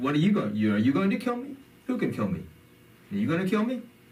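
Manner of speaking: put-on loud, rising challenging tone. Narrating a story, speaker retells the Imam's reply in a loud voice. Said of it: "now in a loud voice he says".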